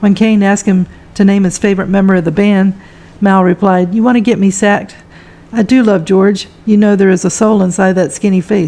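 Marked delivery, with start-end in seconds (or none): none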